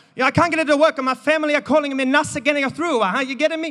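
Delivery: put-on flustered Italian grandmother accent. Retelling a phone complaint from Donna the Nonna: imitating Donna's Italian accent. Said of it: "I apologise to all the Italians".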